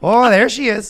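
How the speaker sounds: put-on Canadian accent, high and loud. Imitating Canadian catcalling: put-on Canadian accent. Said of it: "the Canadian catcalling is".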